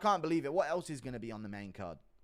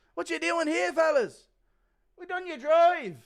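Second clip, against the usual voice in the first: shrill, very loud, high-pitched shouting; 14 semitones higher, 9 dB louder than usual.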